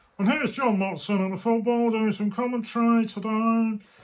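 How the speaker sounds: awful, high, put-on football commentator voice. Trying on a sheepskin coat, doing an awful John Watson impression. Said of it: "that was an awful impression".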